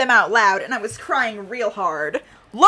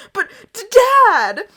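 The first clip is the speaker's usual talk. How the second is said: put-on very high, loud, broken, tearful wail; 11 semitones higher, 5 dB louder than usual. Reading a fan story aloud, quoting the narrator crying hard: imitating crying hard. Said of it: "I'm saying it like that because I'm crying real hard".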